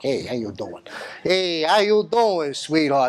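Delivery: exaggerated, swooping New York accent. The speaker, from new york, greets listeners in an exaggerated new york accent. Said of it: "I got all those vowels figured out".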